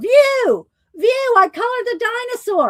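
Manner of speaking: loud yell, pitched very high. Calling out to View, who had not noticed earlier: yelling. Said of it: "I'm yelling at View".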